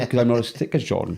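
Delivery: ordinary talk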